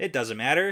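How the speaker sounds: ordinary talk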